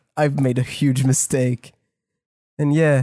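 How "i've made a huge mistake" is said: ordinary talk, nothing marked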